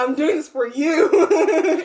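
laughing, giggling mock scolding tone.

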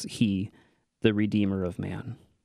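ordinary talk, nothing marked

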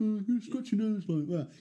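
high voice, top lip tightened, jaw dropped. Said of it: "the [name] impression".

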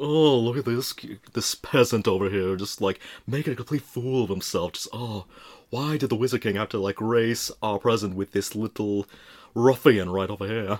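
condescending, snobbish, moneyed talking-down voice. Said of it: "talk like the millionaire from Gilligan's Island".

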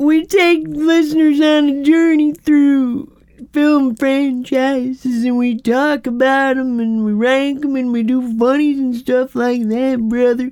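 put-on stoned voice. Describing the show in a joking voice: put-on high character voice. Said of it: "That's my high character".

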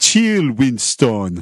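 posing in a fake West Indian accent. Retelling a college kid calling to a guy named Winston: fake West Indian accent. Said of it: "talks like he's from the West Indies".

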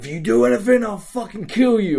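high, mock menacing shouted voice. Retelling taking a hostage behind a counter: acting out a threatening yell. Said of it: "I'm really threatening at this point. I'm like yelling".

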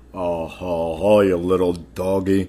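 put-on cowboy film-star voice. Asked by the other speaker to do a John Wayne, giving a John Wayne impression. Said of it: "Let me hear your John Wayne".

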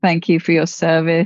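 ordinary talk

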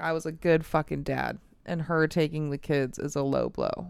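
ordinary delivery

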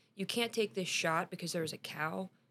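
usual speaking voice

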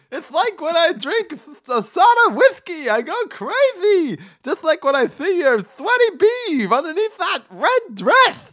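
very high, very loud, swooping cartoon-style holler. Continuing a crude joke bit, in an X-rated Roger Rabbit voice. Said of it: "doing your voice of your X-rated Roger Rabbit".

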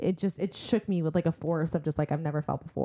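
normal talking voice

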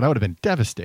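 normal talking voice

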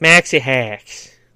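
thick, hard Boston accent, laid on. Showing how the name maxi hacks should be said: hard boston accent. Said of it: "a hard Boston accent".

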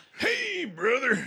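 very high, loud, belted wrestling-promo voice. Greeting another speaker in a put-on wrestler voice: Macho Man Randy Savage voice. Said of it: "Was that Randy S-, Macho Man Randy Sa-".

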